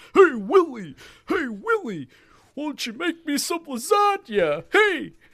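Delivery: very high, loud, slow character voice. Talking about an old TV show, imitating how Alf talked; Alf voice. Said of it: "That's kind of how Alf talked".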